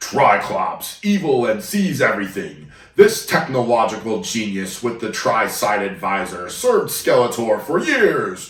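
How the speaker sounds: grand, over-the-top dramatic reading with swooping pitch. Reading a Triclops character description aloud, most dramatic voice possible. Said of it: "I'm going to read this in the most dramatic voice possible".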